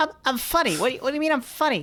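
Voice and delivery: very high, fast, squeaky tough-guy voice. Describing someone who sounds like Joe Pesci on helium: Joe Pesci on helium voice. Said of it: "he's like Joe Pesci inhaled a helium balloon".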